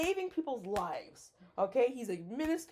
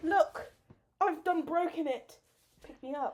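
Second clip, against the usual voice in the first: put-on, comic British-sounding accent; 4 semitones higher than usual. Acting out a fall and asking to be picked up: British accent. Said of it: "You sound British".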